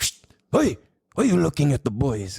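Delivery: teasing, joking put-on teacher voice, calling out. Retelling how a teacher teased students staring out the window: imitating Mister Zara. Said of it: "And he would always be like".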